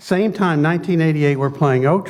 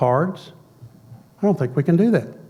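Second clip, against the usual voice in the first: usual speaking voice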